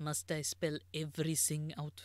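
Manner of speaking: put-on German accent. Voicing a character in a scene, in a german accent. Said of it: "it's German".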